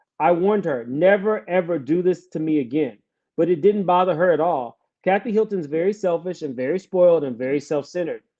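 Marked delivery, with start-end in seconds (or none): none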